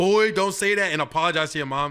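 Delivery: ordinary delivery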